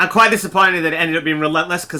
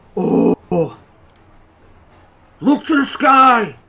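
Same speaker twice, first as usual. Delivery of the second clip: acted loud shout, higher and louder; 8 semitones higher, 5 dB louder than usual. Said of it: "so that everybody can hear me".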